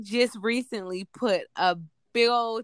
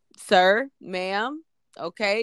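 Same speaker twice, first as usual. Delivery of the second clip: play-acted stern, firm, strong, no-nonsense voice. Retelling talking to patients at work: imitating own strong voice. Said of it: "I have to get my little strong voice on".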